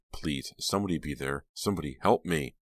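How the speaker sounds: plain reading voice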